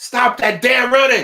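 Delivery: very high, very loud, shrill yell. Playing the monster while a child runs away, retelling own yell. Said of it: "And and I'm yelling".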